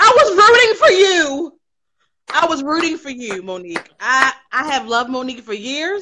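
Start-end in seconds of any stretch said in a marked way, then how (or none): 0.0-3.9 disappointed, loud, high outcry with swinging, swooping pitch. Doing an impression while giving an opinion on Monique: Tyra Banks impression. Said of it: "I'm gonna do my Tyra Banks impression".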